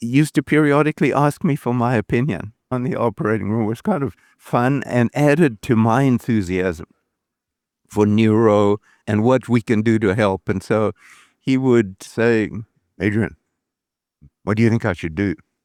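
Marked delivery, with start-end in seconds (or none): 13.0-15.4 mock small, grumpy voice, spoken quickly. Retelling how he used to ask the speaker's opinion, in a mock-grumpy little voice. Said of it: "A little grumpy sort of voice".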